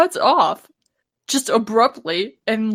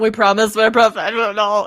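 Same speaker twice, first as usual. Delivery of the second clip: normal talking voice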